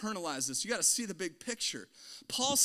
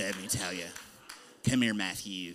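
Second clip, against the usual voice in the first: put-on very low, deep old smoker-lady voice; 12 semitones lower than usual. Playing your own grandmother as she speaks to Matthew, in a Granny John voice. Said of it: "My hypocritical voice is like an 80-year-old smoking lady".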